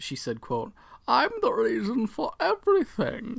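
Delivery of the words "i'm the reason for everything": loud, very high, squeaky villain voice. Quoting a line said by a movie character: Bane voice. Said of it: "In her Bane voice".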